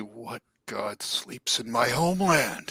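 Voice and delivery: very low, very quiet, hushed muttering. A player's character, after hearing strange words, asks the others, muttering lowly. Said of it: "I mutter lowly".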